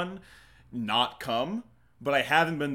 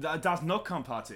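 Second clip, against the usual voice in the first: put-on German accent, higher; 3 semitones higher, 4 dB quieter than usual. Saying a line after being asked for a German accent: German accent. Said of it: "You have to say it in a German accent".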